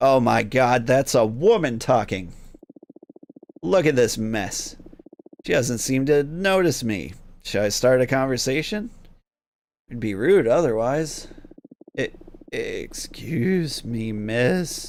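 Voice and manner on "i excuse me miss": cracked, falling-apart, broken voice, very slow. Speaking to a woman as a ghost for the first time: broken voice. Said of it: "The voice crawls out of my throat as broken".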